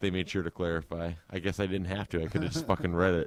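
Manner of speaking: ordinary talk, nothing marked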